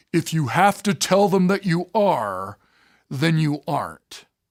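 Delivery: deep, low baritone delivery. Retelling Mr. Peck's reply to a startled woman who asked if he felt shafted, in Mr. Peck's baritone voice. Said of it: "And in his baritone voice".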